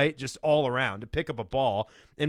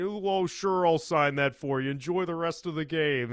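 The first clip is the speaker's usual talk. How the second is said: mock sports announcer voice; 3 semitones higher than usual. Retelling what Bill Walton said while signing an autograph: Bill Walton voice. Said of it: "his Bill Walton accent".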